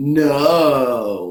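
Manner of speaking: loud, drawn-out sarcastic delivery, tone against the words. Retelling a movie scene where a kid answers the coach, retelling a sarcastic 'No'. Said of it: "his words and his tone were incongruent".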